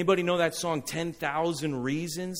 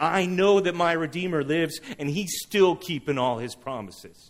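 ordinary talk

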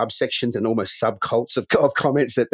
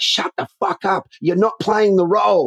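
mock shouted, pitched-up yell; 9 semitones higher, 4 dB louder than usual. Retelling what was yelled at a noisy audience member: imitating own yell. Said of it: "And I yell out".

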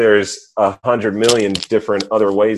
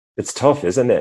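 clumsy, bad put-on British accent; 3 semitones higher than usual. Retelling what a British person said on hearing the mother got sick, bad British accent impression. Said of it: "I can't really do that accent that great".

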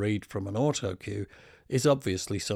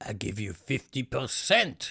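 put-on heavy French accent; 2 semitones higher than usual. Retelling what a shop tailor said about a jumper: heavy french accent. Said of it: "with a heavy French accent he said".

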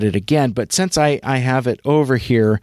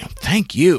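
forceful, in-your-face, hard-hitting delivery; 3 semitones higher than usual. Retelling Sue Blu thanking them: imitating Sue Blu coming at them. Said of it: "she was almost, like, coming after me".

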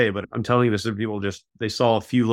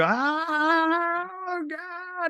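acted very high full-lung scream, long oh; 4 dB quieter than usual. Retelling the chaplain heard from downstairs, imitating a full-lung scream. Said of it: "screaming at the top of his lungs".

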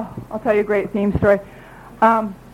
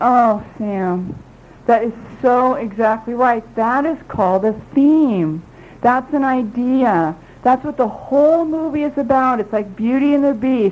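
ordinary talk

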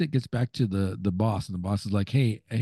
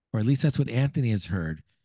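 ordinary delivery

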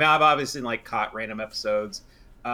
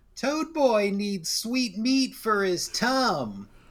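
put-on high little kid's voice, tum drawn out; 12 semitones higher than usual. Describing a strange movie moment, quoting a guy at a party, imitating a child's voice. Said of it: "speaks with a child's voice".

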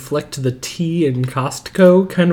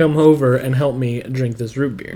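ordinary talk

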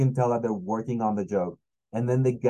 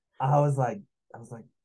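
ordinary talk

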